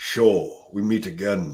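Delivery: low, very slow drawl dragging every word. Trying out an impression for another speaker: Sean Connery impression. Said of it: "so I can't do him very well".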